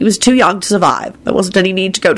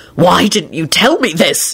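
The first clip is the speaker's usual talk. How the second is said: horrified, aghast, appalled voice. Narrating a novel, Lupin jumps up and questions Elizabeth: horrified voice. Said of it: "He said in a horrified voice".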